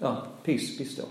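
unstrained, very calm, hushed voice, near a whisper. Retelling Jesus getting up and speaking, acting out a very calm command. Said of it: "Very calmly".

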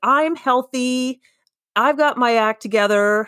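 mock pleased-with-itself, smug, self-satisfied tone. Describing their past self before breast cancer: imitating own smug past self. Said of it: "a smug jerk".

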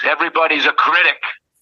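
high, full-throated yell at top of lungs. Retelling a bandstand moment during a solo: imitating own yell. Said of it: "I yell out at the top of my lungs".

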